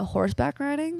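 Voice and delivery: put-on solid, natural-sounding, convincing American accent. Imitating how Americans reply to horse riding: good American accent. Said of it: "That's a good American accent".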